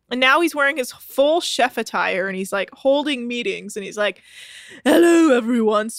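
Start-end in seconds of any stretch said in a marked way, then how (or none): 4.8-5.9 newly adopted put-on British accent. Retelling a castmate's meeting greeting: imitating Adam's British accent. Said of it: "speaking in a British accent".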